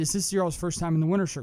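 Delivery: ordinary talk, nothing marked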